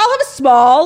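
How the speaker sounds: loud, high, proud calling out. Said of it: "if I was a small, I would be like".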